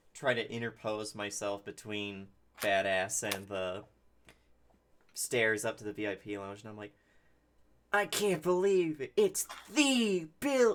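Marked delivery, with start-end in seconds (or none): 7.9-10.7 far too loud, overloud voice, pitch raised. Getting between Badass and the stairs to the VIP lounge, talking way too loud. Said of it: "I'm talking way louder than I should be".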